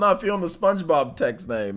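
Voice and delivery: ordinary talk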